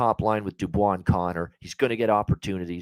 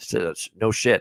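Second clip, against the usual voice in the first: usual speaking voice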